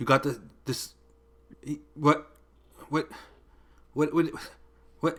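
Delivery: whispered, hushed, broken stammering mutter. Voicing a character broken by a symbol: incoherent stammering muttering. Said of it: "he can't even form a coherent sentence".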